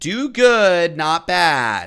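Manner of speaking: condescending tone. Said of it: "So condescending".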